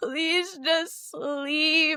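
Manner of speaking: mock tearful, high-pitched, sobbing begging voice. Retelling pleading with a baby awake at four: retelling a tearful plea. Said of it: "pleading with this nine-month-old".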